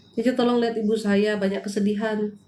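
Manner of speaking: ordinary delivery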